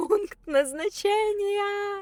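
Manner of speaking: put-on child's high, slow, drawn-out, grand announcement-style cry.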